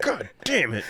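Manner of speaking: exasperated, fed-up, angry outburst of annoyance. Retelling how a friend of the show reacted to fans' quotes: imitating Gibbs getting mad. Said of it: "he'd just get mad".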